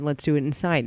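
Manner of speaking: ordinary talk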